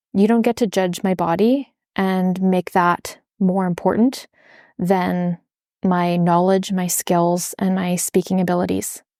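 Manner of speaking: ordinary talk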